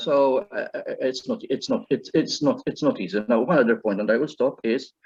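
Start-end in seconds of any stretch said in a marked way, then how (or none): none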